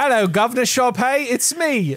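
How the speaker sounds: put-on American faking British accent. Mocking a movie villain's accent: stereotypical fake English accent. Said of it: "the stereotypical American impersonating an English person accent".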